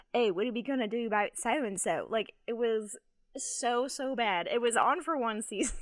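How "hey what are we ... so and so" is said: put-on Australian accent. Retelling a scene of Heath Ledger doing bicep curls: imitating Heath Ledger in Australian accent. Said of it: "I have a great Australian accent".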